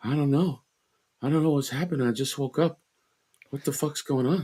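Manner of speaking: tired, drained voice, soft and high-pitched. Doing a tired, just-woke-up version of the impression: tired Mark Wahlberg impression. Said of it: "here's a tired Mark Wahlberg".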